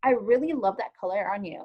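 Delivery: genuine, earnest, sincere, heartfelt delivery. Showing how to give a person a compliment, in a sincere voice. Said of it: "say it in a sincere voice".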